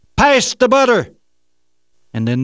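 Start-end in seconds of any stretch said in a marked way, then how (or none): 0.2-1.2 thundering, very loud, very high booming shout. After the little voice gets no reply, it booms out in a booming shout. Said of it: "The voice boomed out".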